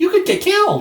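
very high, small, squeaky cartoon voice. Describing a cartoon where Mickey and Bugs go skydiving, Mickey Mouse voice. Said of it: "says in like the Mickey Mouse voice".

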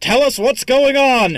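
booming, very high, very loud roaring bellow. Narrating Twily's kick at Goose as he bellows in Twily's booming voice. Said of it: "in a voice that sounds very different from his normal voice, because he has the booming voice".

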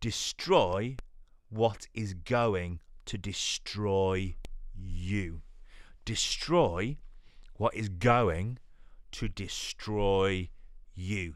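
very slow, drawn-out, deliberate delivery. Explaining Jesus's words to listeners, saying this part very slowly. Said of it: "I'll say this slowly".

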